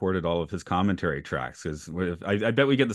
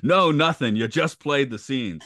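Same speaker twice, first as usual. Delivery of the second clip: gruff, slightly high voice; 6 semitones higher, 4 dB louder than usual. Acting out an interview, answering the questions in a gruff Ed Asner voice. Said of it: "answers in a gruff voice".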